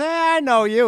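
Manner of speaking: high-pitched, loud mock call-out.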